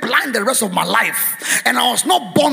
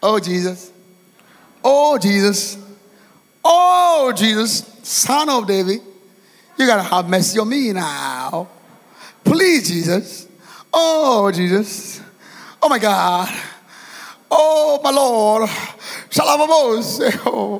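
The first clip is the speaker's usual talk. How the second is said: mock cool-guy voice, playing it cool. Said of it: "if I try and be that I be, cool guy".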